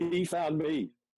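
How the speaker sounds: choked-up emotional voice. Telling how a lost teammate got in touch after forty years, emotional, choking up.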